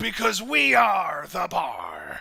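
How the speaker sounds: loud, booming, rough, swooping pirate roar. Commenting on a match, the speaker delivers a tag team's line in pirate voice. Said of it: "I will never not do that in pirate voice".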